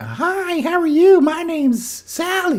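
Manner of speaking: obviously fake female voice, very high and slow. Describing how male narrators voice women, in a fake female voice. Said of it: "a male narrator having to do a female voice".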